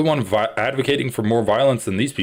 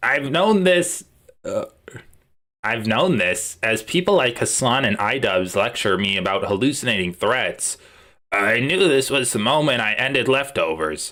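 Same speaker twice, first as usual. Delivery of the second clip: put-on nasal, gravelly voice. Attempting on the spot to imitate Ethan Klein, doing an Ethan Klein impression. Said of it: "Let me see if I can do an Ethan Klein impression".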